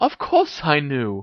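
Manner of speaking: gleeful, delighted, savoring, drawn out. Ginny answers Harry's disbelieving question, gleeful. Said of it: "said Ginny gleefully".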